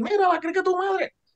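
mock yell, high-pitched and sounding far away.

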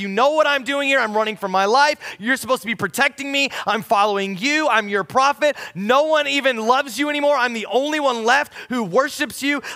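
put-on furious, ranting tone. Speaker retelling a prophet venting at god, retelling an angry outburst. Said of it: "He's super mad at God".

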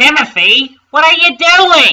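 shrill, very loud, high yell at full volume. A driver to Timothy, who keeps speeding on, shouting. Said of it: "shouted his driver".

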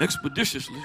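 hushed, whispery, breathy put-on voice, word breathed out. Announcing the pastor is coming, saying expeditiously in a Joe Clark voice. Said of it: "In my Joe Clark voice".

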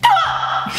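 very high, short scream. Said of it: "But only certain screams. Screams like".

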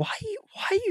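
very high, quizzical voice. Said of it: "She'll be like".

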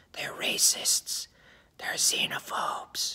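soft, slow, devilish whisper.

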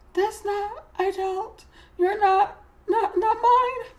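put-on small, high-pitched voice of a four-year-old. The narrator, handed a sweater by Miss Price, denies it is hers: little voice. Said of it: "I say in a little voice that was maybe me when I was 4".

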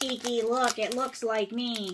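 slow, drawn-out cartoon cat voice. Imitating the cat from the movie: Gigi voice from Kiki's Delivery Service. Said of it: "normal Gigi in the movie is just like".

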